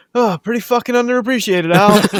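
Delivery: utterly blasé tone. Recounting a favourite movie bit over the radio, imitating Roy's blasé reply. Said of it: "so blasé the way he says it".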